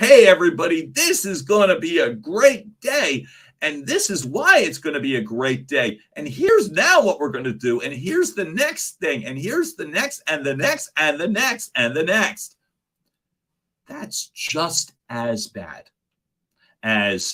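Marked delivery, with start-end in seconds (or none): 0.0-12.6 over-the-top gushing enthusiasm, fast and swooping. Giving tips on varying tone, showing a bad example: overly enthusiastic tone. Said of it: "If you come in with an overly enthusiastic tone".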